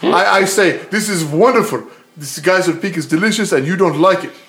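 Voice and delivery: loud, thick, fake Russian accent, Australian-tinged.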